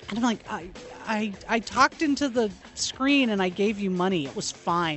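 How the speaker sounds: ordinary talk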